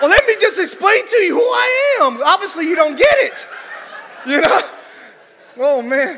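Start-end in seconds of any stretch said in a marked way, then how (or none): 0.0-3.5 put-on defensive, self-justifying tone, pitched up. Retelling the angel's reply to Zacharias: put-on defensive Gabriel. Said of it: "the angel has to be all defensive".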